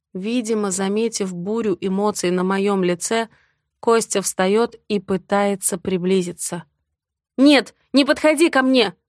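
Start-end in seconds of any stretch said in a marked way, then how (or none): 7.3-8.9 shrill, loud, outright yelling. Narrator reads a wife's line as her husband tries to approach, yelling. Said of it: "не ори!".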